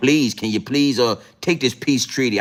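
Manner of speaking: mock, put-on begging voice. Acting out asking a child again to sit down: mock begging. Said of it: "I gotta beg him".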